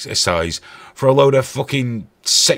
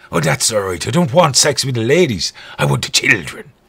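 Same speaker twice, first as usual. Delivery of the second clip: put-on Irish brogue, priest-like voice. Speaker voicing a priest in a comedy bit, Irish priest accent. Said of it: "It's that Irish priest again".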